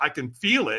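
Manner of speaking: ordinary talk, nothing marked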